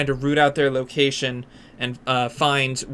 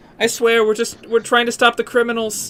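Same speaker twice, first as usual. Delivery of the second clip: very high, tearful, crying and pleading; 9 semitones higher than usual. Voicing a woman begging a swordsman for her life: crying and pleading. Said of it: "the woman starts crying and starts pleading".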